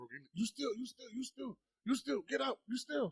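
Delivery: shrill, very high yelling, rising. Retelling a shopkeeper accusing them of stealing: imitating a shopkeeper yelling. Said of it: "He's yelling at you".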